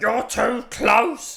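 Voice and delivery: put-on very high, loud, shrill old lady shout. Retelling how an elderly lady on the street shouted: imitating an old lady shouting. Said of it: "Just shouted out".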